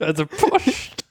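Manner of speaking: put-on Polish accent, slow.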